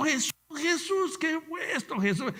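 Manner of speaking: play-acted very high, dragged-out crying shout. Testifying to the brethren about leaving in tears, retelling own shouting.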